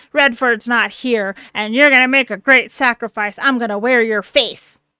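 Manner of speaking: possessed horror creature voice. Retelling a skinwalker's threat to Carrie in a Deadite type voice. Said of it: "in the very Deadite type voice of saying".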